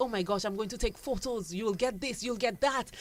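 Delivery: mock thrilled, fast, excited, bubbling-over gushing. Retelling a buyer's voice note about unboxing her order: imitating an excited customer. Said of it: "She's excited".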